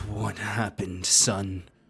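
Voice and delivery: heavily distorted voice, warped out of shape. Voicing a figure whose voice changes as the wall nears: Lacuna distorted voice. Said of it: "Lacuna distorted voice".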